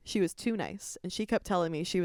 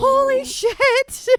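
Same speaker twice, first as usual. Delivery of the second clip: put-on yell, higher and louder; 11 dB louder than usual. Retelling a childhood injury, imitating own yelling. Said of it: "And I start yelling".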